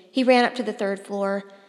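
ordinary delivery

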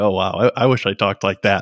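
plain

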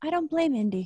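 very small, tiny, soft voice. Retelling what Beth said during the match, imitating Beth Phoenix's small voice. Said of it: "Beth says in a very small voice".

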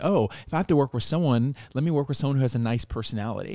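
normal talking voice

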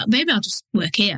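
ordinary talk

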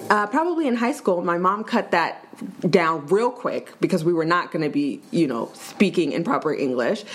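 ordinary talk

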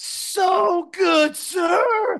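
put-on very high, very loud pained cry. Retelling how a man answered the speaker, imitating his loud pained reply. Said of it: "Like real loud and like he's hurting".

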